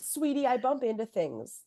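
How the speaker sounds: put-on, dismissive, passive-aggressive, gaslighting tone. Retelling a character's excuse to his partner: imitating passive-aggressive man. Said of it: "mean than passive-aggressive and, like, gaslighty".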